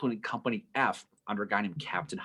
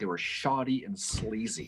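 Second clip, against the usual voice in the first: normal talking voice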